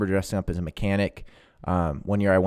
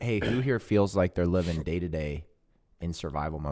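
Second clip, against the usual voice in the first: usual speaking voice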